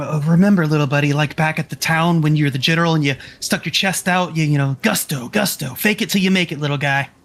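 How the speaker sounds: whispering in a character voice. Whispering to a small companion riding on one's shoulder: whispering in character. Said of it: "I'll whisper to him".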